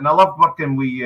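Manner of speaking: ordinary talk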